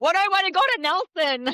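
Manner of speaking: very high, loud, tearful crying wail. Retelling being upset on the bed in the afternoon: imitating own past crying. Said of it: "crying on the bed in the middle of the afternoon".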